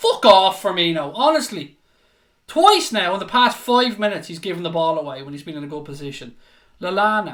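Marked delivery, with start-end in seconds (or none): 0.0-4.3 loud shouting commentator voice. Narrating a football match, shouting at a player who lost the ball. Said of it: "For those of you wondering why I'm shouting".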